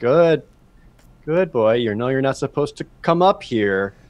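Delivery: soothing, forced calm with panic heard underneath. Voicing a character backing away from an owlbear: feigning calm while panicking. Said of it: "pretend like he's not panicking right now".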